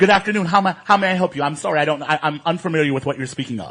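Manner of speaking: acted, mock overly polite tone. Showing the careful tone used to avoid seeming threatening: imitating an uber polite tone. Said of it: "I'm uber, uber polite".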